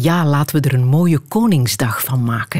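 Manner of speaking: normal talking voice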